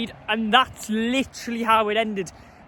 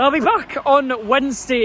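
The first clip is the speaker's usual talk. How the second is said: loud voice cracking and breaking on the words; 3 semitones higher, 5 dB louder than usual. Signing off a football video to viewers: voice cracking. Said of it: "Excuse the voice crack there".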